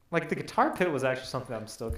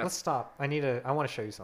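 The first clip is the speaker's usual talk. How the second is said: ordinary talk, nothing marked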